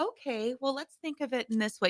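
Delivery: soft, calm, even, gentle voice. Retelling what a mother said to an angry pregnant daughter: imitating a calm mom voice. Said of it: "very good mom, calm voice".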